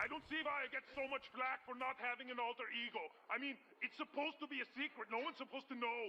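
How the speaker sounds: put-on Austrian accent, pitched high. Speaking in character about not having an alter ego: austrian accent. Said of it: "What is that accent?".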